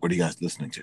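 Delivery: put-on very low male voice. Retelling how James asked the group what they were listening to, imitating James's very low tone. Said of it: "Very low tone".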